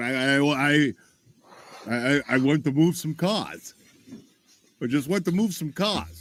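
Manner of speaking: halting, slow, stuttering speech. Mocking a witness's excuse on the stand: imitating a stammering witness. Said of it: "he's going".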